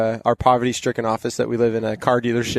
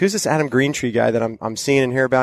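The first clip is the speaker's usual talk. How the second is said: ordinary talk, nothing marked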